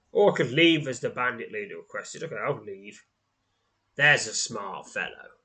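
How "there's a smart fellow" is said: dripping, derisive, mocking sarcasm. Narrating a story, the bandit leader speaks as you turn to leave: sarcastic derision. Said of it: "his tone dripping with sarcastic derision".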